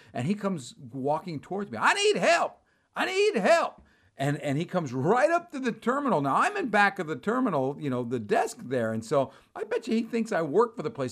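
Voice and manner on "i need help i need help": very high, mocking yell. Retelling a man in the terminal mimicking the speaker, retelling a mocking yell. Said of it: "he starts mimicking me".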